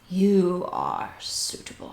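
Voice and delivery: whispered, breathy, ghostly voice. Narrating a scene, voicing a spectral figure that points at a player: ghostly spectre voice. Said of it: "very like Ghost of Christmas Future".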